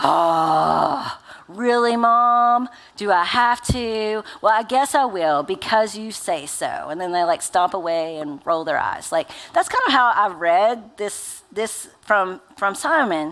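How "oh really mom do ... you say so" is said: put-on slow, reluctant, put-upon child voice, drawn-out "oh". Parent acting out their children answering a chore request: imitating a reluctant kid. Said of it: "Simon probably sounds like my children".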